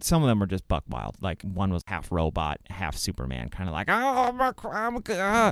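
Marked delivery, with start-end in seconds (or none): 3.9-5.5 put-on pained voice, much higher, slower. Describing a half-robot, half-Superman character to a co-host; mock-pained voice. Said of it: "He just sounds like he's hurt".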